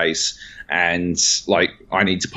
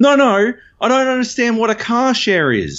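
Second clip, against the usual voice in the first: mock very high, abrupt, shrill shout; 4 dB louder than usual. Retelling how a woman suddenly yelled back at him, imitating her yell. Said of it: "suddenly she yells out".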